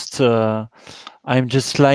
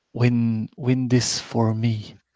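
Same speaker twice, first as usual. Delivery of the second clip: faint, weak, tired whisper; 4 dB quieter than usual. Asking the listener to bend close, too weak to raise the voice: weak, tired whisper. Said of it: "so I can whisper to you because I don't have the energy to to raise my voice".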